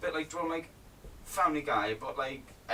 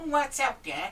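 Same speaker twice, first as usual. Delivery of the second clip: squeaky, very high cartoon rabbit voice; 11 semitones higher, 4 dB louder than usual. Friends calling out voices to imitate, doing Bugs Bunny. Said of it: "Bugs Bunny".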